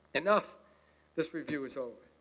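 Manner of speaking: ordinary talk, nothing marked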